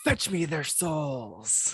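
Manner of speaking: each word drawn out slowly. Asked by the other speaker to do it, imitating the zombies announcer. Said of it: "what the guy says when the dogs are coming in zombies".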